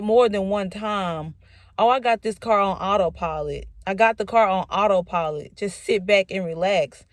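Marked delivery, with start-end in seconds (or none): none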